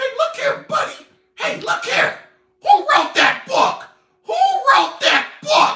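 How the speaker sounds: squeaked out, way up high. Mocking men he calls Darrens, the speaker does a mocking Mickey Mouse voice. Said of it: "They talk like Mickey Mouse".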